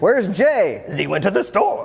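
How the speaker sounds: high-pitched mock French accent.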